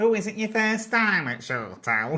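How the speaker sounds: very high, loud, put-on fifties landlady accent. Retelling how a costumed young woman greeted them: imitating her 1950s landlady accent. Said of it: "she was like doing accents and everything".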